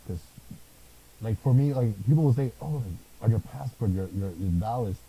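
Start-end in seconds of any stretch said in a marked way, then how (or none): none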